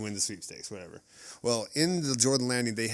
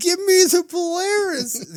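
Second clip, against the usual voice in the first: very high, shrill, carrying, drawn-out yell; 12 dB louder than usual. Telling a story about a lady standing on a chair, retelling a woman's yell. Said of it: "Yells it again".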